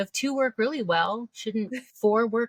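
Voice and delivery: openly sarcastic, heavy, dripping sarcasm. Asking a question as a joke: very sarcastic. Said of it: "I'm being very sarcastic".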